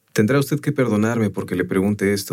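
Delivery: ordinary delivery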